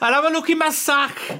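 put-on poor Welsh accent. Hosts joke about a Welsh Santa; one answers in a bad Welsh Santa voice. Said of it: "that was bad".

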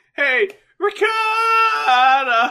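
shrill, very high, loud fake voice crack, ricotta stretched out. Shouting a food name as a joke bit: put-on voice crack. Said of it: "make my voice crack longer in succession".

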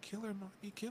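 another voice, murmured high and very soft. Describing a film's climax where a woman speaks in another's voice, Jason's voice. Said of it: "you literally hear her speak in Jason's voice".

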